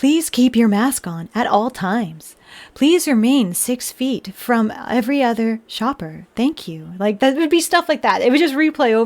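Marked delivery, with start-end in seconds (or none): 0.0-6.9 slow, recorded, automated public-address announcement voice. Recalling working retail, quoting the store announcements that replayed: automated announcement voice. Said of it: "in that voice".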